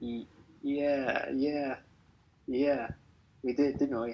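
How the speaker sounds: hesitant, stumbling, unsure-sounding tone. Answering another speaker's question, sounding unsure. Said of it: "You sound so unsure".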